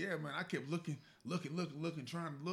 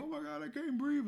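mock starstruck fan scream, pitched way up; 11 semitones higher than usual. Describing how people react on seeing a celebrity: imitating a screaming fan.

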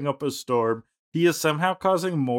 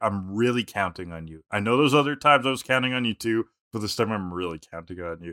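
plain

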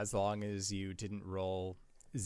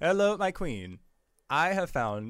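loud, high-pitched robotic text-to-speech voice; 8 semitones higher, 8 dB louder than usual. Explaining that sending messages carries no spoken voice, in a Microsoft Sam voice. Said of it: "Microsoft Sam shows up on the other end being like".

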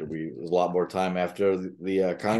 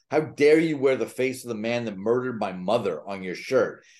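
enraged, sputtering, furious outburst; 4 semitones higher than usual. Retelling a wife's outburst at a musician: imitating someone yelling in rage. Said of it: "his wife is spluttering in rage and yells at him".

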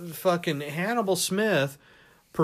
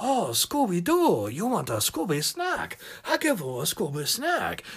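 cartoonish, sing-song put-on Chinese accent; 3 semitones higher than usual. Speaker shows how a chinese character in a cartoon would sound, mock chinese accent. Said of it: "what are they going to sound like?".

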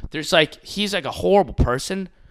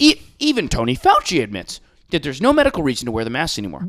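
signature big-audience broadcaster tone. Imitating a TV host talking about masks: imitating Tucker Carlson's tone. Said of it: "in this tone, he talks like".

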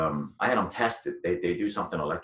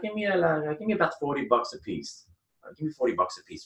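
high-pitched put-on Greek accent; 10 semitones higher than usual. Quoting a man's answer when asked his price, imitating a Greek accent. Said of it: "he had a Greek accent".

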